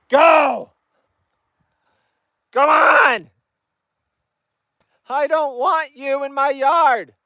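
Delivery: shrill, very high-pitched yell. Speaker shouts at deer in the yard to drive them away, barking at deer to chase them. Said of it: "I am so sorry to have to bark on camera".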